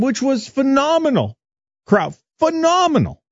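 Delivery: excited, delighted tone.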